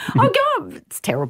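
laughing through tears, very high-pitched. Apologizing after being thanked for sharing something personal: crying while laughing. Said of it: "I'm crying".

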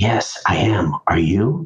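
imitated whisper. Retelling an author's whispered reply at a book signing: imitating a whisper. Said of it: "leaned forward and whispered back".

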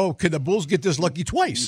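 usual speaking voice

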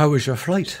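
bad put-on Irish accent. Retelling being met off the plane, quoting the greeter: Erica Fennessy's terrible Irish accent. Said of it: "a terrible Irish accent".

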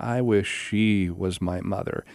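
put-on calm, serene, happy, peaceful voice. Retelling Kana's answer when the movie was paused, imitating Kana's serene happy voice. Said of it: "in this kind of happy this very serene peaceful voice".

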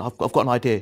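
ordinary talk

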